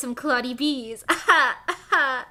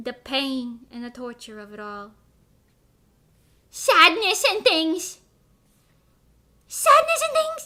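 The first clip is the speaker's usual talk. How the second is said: fake, played-up Italian accent. Lamenting a closed sandwich shop for a joke: put-on Italian accent. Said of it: "That accent was profound".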